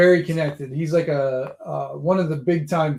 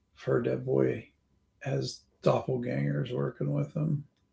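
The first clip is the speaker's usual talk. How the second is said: close, secretive half-whisper; 9 dB quieter than usual. Voicing a character who bends down to a player's ear: half-whispering in someone's ear. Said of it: "bends down and whispers in your ear".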